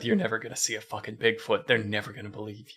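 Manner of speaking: muttering under breath. Imagining what the cameraman mutters while filming: muttering under his breath. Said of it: "Just muttering under his breath".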